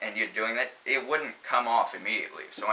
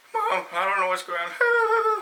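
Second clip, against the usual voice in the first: very high, swooping, wimpy crying whine; 11 semitones higher, 4 dB louder than usual. Retelling a show scene where a character freaks out, imitating a wimpy whiny voice. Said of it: "Wimpy, whiny voice".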